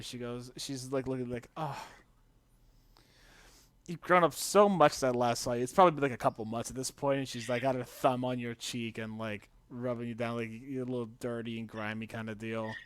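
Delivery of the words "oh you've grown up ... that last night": longing, wistful tone. Narrating a woman who sits across the table and speaks to you, wistful. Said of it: "she looks at you like kind of wistfully".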